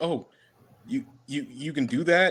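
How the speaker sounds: put-on mild surprise, tripping over words, stammering. Retelling a fight where one brother transforms: acting a little surprised. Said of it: "gets a little surprised".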